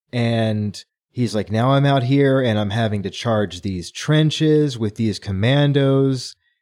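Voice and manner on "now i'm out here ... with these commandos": ordinary talk, nothing marked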